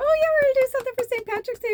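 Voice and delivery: high, fast, loud burst of excitement. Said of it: "I was so excited".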